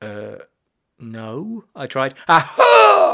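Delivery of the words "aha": sudden, very high, very loud shriek. Narrator reading Mother's exclamation, shrieking. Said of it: "She shrieked and nearly leapt".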